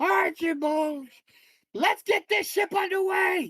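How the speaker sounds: shrill, very high shouted yelling. Narrating the story as the captain orders the ship underway: captain yelling an order. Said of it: "He starts yelling".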